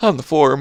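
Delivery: words yawned out and stretched.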